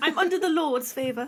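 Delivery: put-on British accent. Asked by another speaker to say the line in a british accent: put-on british accent. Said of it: "said that in a British accent".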